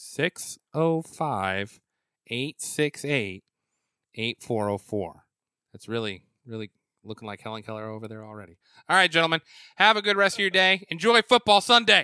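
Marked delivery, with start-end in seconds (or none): 0.0-5.2 slowed down, slow and deliberate. Repeating a phone number after being told it was said too fast, slowed down. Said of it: "let me slow it down".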